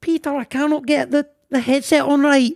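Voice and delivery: put-on high elderly woman's voice with Scottish accent. Telling a Titanic story, the speaker voices a woman overheard: imitating an old Scottish lady. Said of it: "old Scottish lady being like".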